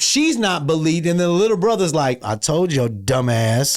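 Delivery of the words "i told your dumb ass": mock mutter under breath, lower. Acting out the disbelieved little brother in a movie plot: imitating muttering under breath. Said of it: "Under his breath".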